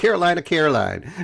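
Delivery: put-on high, terrible, laid-on Southern accent. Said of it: "my accent is terrible".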